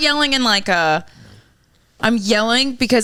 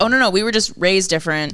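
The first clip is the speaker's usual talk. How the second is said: usual speaking voice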